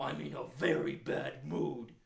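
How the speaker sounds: cranky storybook bear voice, grumpy and sulky. Voicing a bear called out by the kids: grumpy bear voice. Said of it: "you seem like you're feeling really grumpy today".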